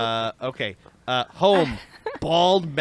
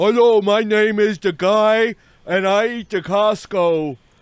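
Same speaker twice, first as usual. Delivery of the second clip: slow, big, bellowing delivery; 8 semitones higher, 8 dB louder than usual. Retelling a funny video's voice-over: imitating the giant from Mickey and the Beanstalk. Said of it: "that's what he sounds like".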